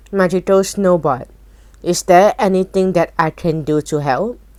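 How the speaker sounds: ordinary delivery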